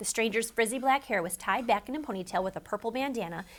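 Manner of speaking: plain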